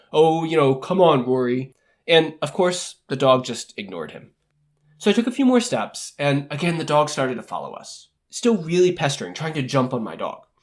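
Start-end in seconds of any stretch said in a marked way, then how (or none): 0.1-1.7 imitated scoff, slower. Retelling how a dog's owner answered their request, retelling a scoff. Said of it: "he just kind of scoffed and said".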